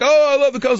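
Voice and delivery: high, loud mock yell. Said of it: "Instead of yelling like".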